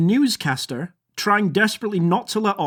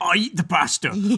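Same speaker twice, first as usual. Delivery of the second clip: put-on kookaburra voice. Performing a given animal prompt: kookaburra voice.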